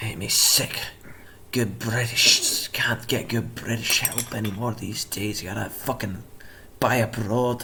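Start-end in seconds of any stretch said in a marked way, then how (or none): 1.5-7.6 quieter muttering and grumbling under breath. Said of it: "cursing to himself".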